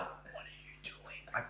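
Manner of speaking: mock alarmed, mortified, hushed whisper. Recounting the moment mum grabbed the phone away; retelling mortified self. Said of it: "Like I was mortified".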